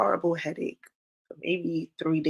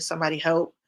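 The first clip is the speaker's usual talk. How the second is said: usual speaking voice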